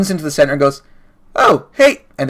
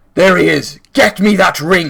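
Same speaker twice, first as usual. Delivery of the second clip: firm, commanding, authoritative delivery; 4 semitones higher than usual. Narrating the fight, the speaker voices the man on the horse shouting. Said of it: "you hear the man on the horse shout".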